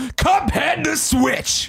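angry outburst pushed very high in pitch. Reading out a listener's letter, doing the mock-angry Greg voice. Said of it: "Angry Greg voice".

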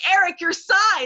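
sudden, loud, high-pitched yell. Retelling someone yelling across the room at a colleague, retelling a yell. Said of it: "She literally yelled".

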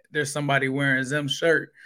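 usual speaking voice

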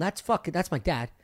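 normal talking voice

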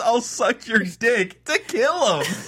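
piercing, high-pitched, shrill pleading scream. Retelling what one of the old people screamed; retelling a scream. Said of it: "the other one screams".

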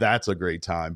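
sarcastic tone. Reacting to a remark in conversation: sarcastic. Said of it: "I was saying it sarcastically".

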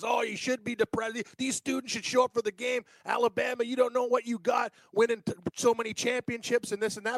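mock angry, worked-up, heated tirade, going wild. Retelling what a panel guest said about absent students: imitating someone ranting angrily. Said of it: "the other guy on the panel was going nuts".

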